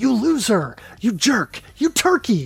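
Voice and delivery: mock yelling. Retelling yelling at enemies on the TV while playing: imitating own yelling. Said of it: "yell at the T V and say things like".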